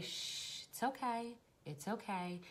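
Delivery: gentle, soft, calm, soothing shushing. Speaker showing what she says while holding someone who struggles: calm, soothing voice. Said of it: "And in a calm voice".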